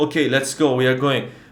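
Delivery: ordinary delivery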